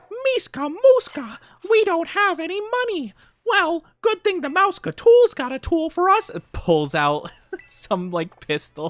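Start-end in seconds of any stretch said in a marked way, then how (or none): 0.2-6.3 very high-pitched cartoon mouse voice. Joking about a cartoon episode, doing Mickey Mouse voice. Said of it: "He's like".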